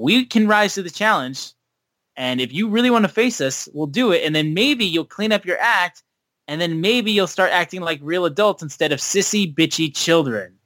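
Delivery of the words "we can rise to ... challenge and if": usual speaking voice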